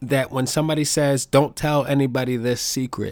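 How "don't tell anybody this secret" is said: normal talking voice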